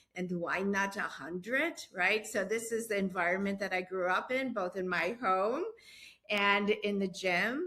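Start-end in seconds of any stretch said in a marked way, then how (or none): 0.2-1.7 put-on speaking with a Latvian accent. Retelling a grandmother's reply to a test score: Latvian accent. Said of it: "she said in her Latvian accent".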